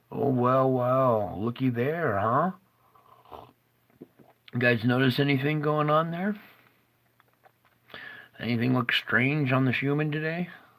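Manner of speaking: tongue-in-cheek, sarcastic tone. Pointing viewers to the schumann reading and asking what looks strange: sarcastic. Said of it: "I'm being sarcastic".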